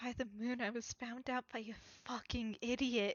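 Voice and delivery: muttered under breath. Voicing a character who mutters an insult to himself: muttered under his breath. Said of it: "Creel just muttered under his breath".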